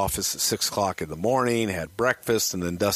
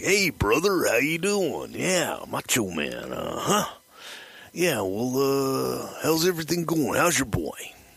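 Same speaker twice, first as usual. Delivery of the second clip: friendly chatter with a stretched-out, drawn-out "uh"; 4 semitones higher than usual. Retelling a payphone call, doing a Randy Savage impression. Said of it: "And Randy calls Rick Rude. And it's like".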